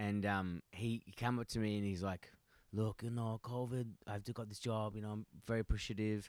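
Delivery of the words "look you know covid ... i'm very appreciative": put-on Colombian accent, quieter. Speaker retells what a new Colombian coworker said to him, in a Colombian accent. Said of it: "I don't know why I started doing an accent".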